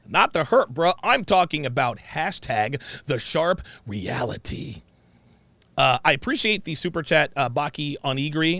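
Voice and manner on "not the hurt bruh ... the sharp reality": ordinary talk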